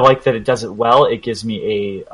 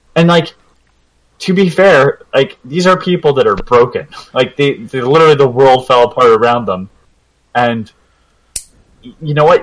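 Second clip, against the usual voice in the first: ordinary talk, nothing marked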